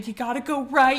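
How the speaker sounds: put-on shrieking scream. Retelling getting a mouse out of the room, voicing a girl's screamed directions, retelling a scream. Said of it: "So Emily's still screaming".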